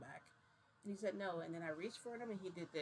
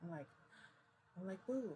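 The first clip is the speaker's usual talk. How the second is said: ordinary talk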